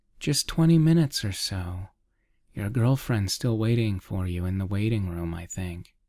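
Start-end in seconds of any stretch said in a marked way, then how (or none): none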